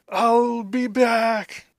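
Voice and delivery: loud, high-pitched cry, word stretched out. Narrating a game where a foe carried off in a monster's maw: crying out. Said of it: "this guy just cries out".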